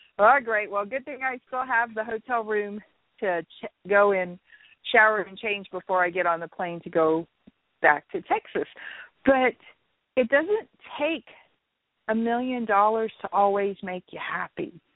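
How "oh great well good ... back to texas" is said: plain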